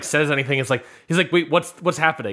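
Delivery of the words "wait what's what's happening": ordinary talk, nothing marked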